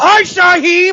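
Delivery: very loud, shrill, high, full-lunged bellowing. Retelling how he greets a passing player: imitating Mike shouting at the top of his lungs. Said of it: "Shouts at the top of his lungs".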